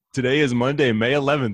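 giggling through the words. Starting the show after asking another speaker to stop laughing: giggling while talking. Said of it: "and we're giggling".

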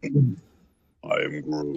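very deep, very low, hushed, soft creature rumble. Asked by a guest about cartoon work, the speaker demonstrates a deep Groot voice. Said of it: "You have to have that kind of deep voice there".

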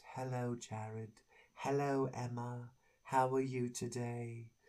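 soft, hushed, gentle, mellow hippie voice. Describing Gabriel to listeners, Gabriel's soft hippie voice. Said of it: "spoke in the soft, hippie voice".

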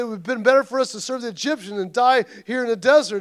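ordinary talk

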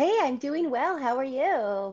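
very high, fake, nice put-on voice. New guest answers the host's greeting on the show, nice fake voice. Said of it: "that's a nice fake voice".

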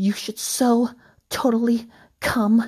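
flirty, seductive. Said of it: "she said in a seductive way".

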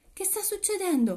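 very high-pitched, alarmed voice. A clandestine woman asks her companions what is happening, alarmed. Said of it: "chiese allarmata una clandestina".

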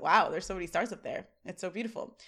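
ordinary talk, nothing marked

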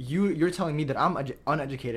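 ordinary delivery

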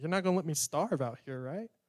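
ordinary delivery

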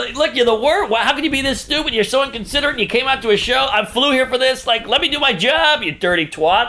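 mock angry, high-pitched tirade, ranting. Retelling what was said to a heckler at a show: imitating going off on someone. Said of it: "going off on her".

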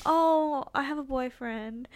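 put-on shy, timid voice. Retelling her answer to a guy who approached her, put-on shy voice. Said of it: "I said it in such, like, a shy voice".

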